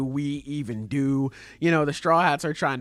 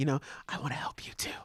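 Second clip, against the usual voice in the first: soft, barely-there little whisper; 10 dB quieter than usual. Retelling how Usopp quietly offered to help: Usopp whispering. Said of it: "he whispered it".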